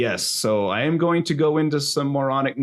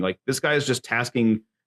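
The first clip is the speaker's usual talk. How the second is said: ordinary talk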